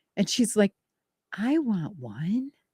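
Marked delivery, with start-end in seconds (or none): 1.3-2.5 mimicked cute little voice, quieter. Retelling a granddaughter arguing with her mom: imitating a little adorable voice. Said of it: "in that little adorable, scrumptious, delicious voice".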